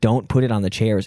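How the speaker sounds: imitated angry voice. Retelling telling a roommate to stop moving a skeleton: imitating own angry past words. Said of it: "I was just getting so mad".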